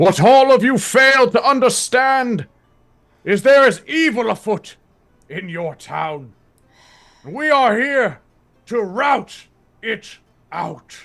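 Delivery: preacher-like yell. A figure flanked by robed figures shouting toward the crowd, priestly shouting. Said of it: "shouting like towards the crowd in like a very like priestly".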